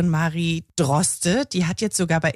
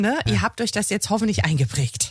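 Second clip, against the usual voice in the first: ordinary delivery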